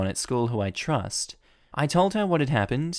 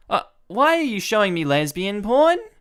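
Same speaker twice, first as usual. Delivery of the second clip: very high, loud, put-on baffled callout; 10 semitones higher, 6 dB louder than usual. Showing how to call out harassing behavior on the spot, loudly feigning confusion. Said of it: "Lower your voice".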